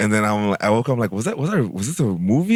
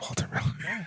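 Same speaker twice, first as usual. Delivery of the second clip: hushed, soft, breathy whisper, barely voiced. Retelling how a man gave the FBI his real name, whispering. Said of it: "he like whispers like".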